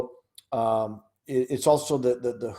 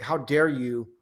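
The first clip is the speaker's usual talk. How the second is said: put-on affronted, angry, indignant teacher voice. Retelling how teachers react when questioned: imitating an angry teacher. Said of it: "They get very angry".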